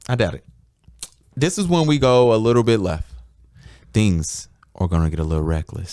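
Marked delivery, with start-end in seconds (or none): 1.4-5.9 deep, low, late-night radio-host voice. Introducing the next segment to the others in the room, deep late-night radio voice. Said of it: "is that your radio after dark voice?".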